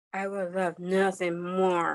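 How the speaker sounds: disgusted, grossed-out voice dripping with sarcasm. Repeating an acting-exercise line when offered chocolate covered crickets: grossed out and sarcastic. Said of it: "in the most grossed out, sarcastic way possible".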